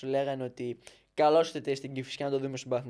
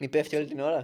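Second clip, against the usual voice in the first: usual speaking voice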